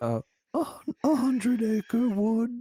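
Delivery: slow, drawling, high-pitched cartoon bear voice. Acting out a DMV clerk scene, answering the clerk: Winnie the Pooh impression. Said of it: "the only impression I think that's, like, okay".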